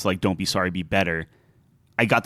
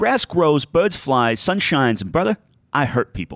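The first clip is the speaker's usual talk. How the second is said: put-on heavy Boston accent laid on, voice pitched up; 7 semitones higher than usual. Quoting a game character for a list, the speaker tries a Scout Boston accent. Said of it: "I'm going to try to do the the uh, the accent here".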